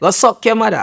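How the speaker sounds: put-on Jamaican accent. A comedian shows how his punchlines sound, in a Jamaican accent. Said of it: "my punchlines being Jamaican".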